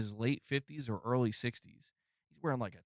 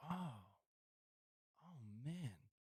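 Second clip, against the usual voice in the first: play-acted very quiet, baffled, bewildered murmur; 15 dB quieter than usual. Retelling a stranger's reaction at the door: imitating a confused man. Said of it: "he just seems very confused".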